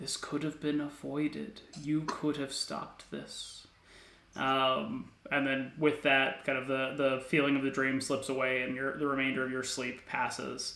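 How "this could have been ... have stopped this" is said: hushed, soft, gentle whisper. Game master voicing a whisper heard in a dream by party members, gentle whisper. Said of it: "a gentle whisper".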